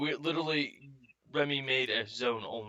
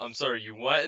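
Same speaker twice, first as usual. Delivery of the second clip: usual speaking voice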